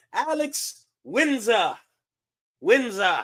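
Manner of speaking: put-on British accent. Moving to the next topic, saying the name Alex Windsor: British accent. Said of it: "Do I have a good British accent?".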